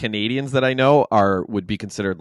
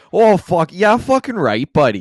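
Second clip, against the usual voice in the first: Alberta way of talking; 9 semitones higher, 7 dB louder than usual. Showing the others what an Alberta accent sounds like: Alberta accent. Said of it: "that's the Alberta accent".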